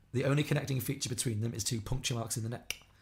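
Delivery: ordinary talk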